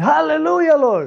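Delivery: acted-out yelling. Retelling jumping out of the chair: retelling own yelling. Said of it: "I start yelling".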